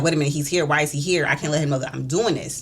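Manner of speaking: normal talking voice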